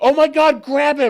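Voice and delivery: piercing shriek, very high, very loud, drawn-out, panicked. Retelling calling to runners after son fell in pond: imitating own scream. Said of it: "I screamed to the runners".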